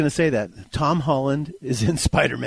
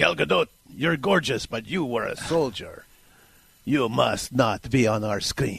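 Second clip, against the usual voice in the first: fake, put-on Russian accent; 3 semitones lower, 3 dB quieter than usual. Guest voices how some countries react to an actress, fake Russian accent. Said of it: "that's my fake Russian".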